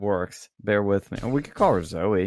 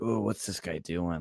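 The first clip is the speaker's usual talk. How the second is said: mock-frightened woman's voice, lower and quieter; 2 semitones lower, 7 dB quieter than usual. Retelling door-knocking for a campaign, the speaker mimics the resident: imitating a scared woman. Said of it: "I'm looking like all like scaredy".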